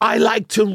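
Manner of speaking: high, loud, mock British accent.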